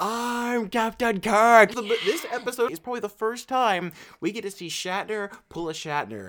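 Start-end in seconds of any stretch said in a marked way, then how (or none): 0.0-1.7 loud, scenery-chewing, over-the-top hammy yell. Retelling a famous scene of going mad and smashing a computer: imitating Captain Kirk yelling. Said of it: "he smashes up the computer and he's yelling".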